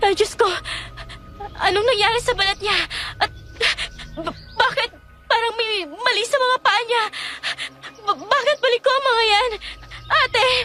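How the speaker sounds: frantic, alarmed, high-pitched, panicked stumbling speech. Seeing a patient's deformed skin and feet, calling to her sister: panicked. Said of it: "Huminahon ka".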